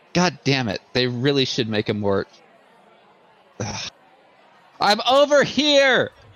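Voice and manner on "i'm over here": loud high-pitched yell. Calling out to another character across a beach: in-character yell. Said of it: "I just yell".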